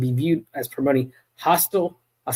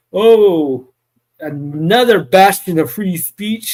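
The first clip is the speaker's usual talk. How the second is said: dry, loud, slow sarcastic drawl, "oh" stretched long; 3 semitones higher, 7 dB louder than usual. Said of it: "I hope you can see the sarcasm in my voice".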